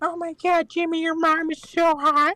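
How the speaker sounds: very high, piping, squeaky character voice. Showing others a first impression, Carl Wheezer. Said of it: "My first impression was, uh, Carl Weezer".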